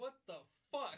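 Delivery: put-on angry, very loud, pissed-off outburst. Retelling a man walking into a room he expected more from, retelling a pissed-off outburst. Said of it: "he's all pissed off".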